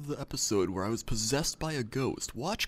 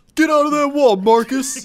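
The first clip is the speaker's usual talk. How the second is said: shrill, very high, very loud screaming; 18 dB louder than usual. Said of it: "He starts screaming at the wall".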